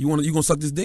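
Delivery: said loudly. Retelling a line once said to someone in a lobby: retelling own line said loud. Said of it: "I said it, like, loud".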